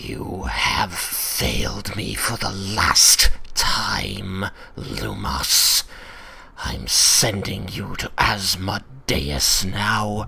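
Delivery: furious, slow, drawn-out hissed voice. Narrating the celestial voice a player's character hears, Tiamat hissing angrily. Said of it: "hissing angrily".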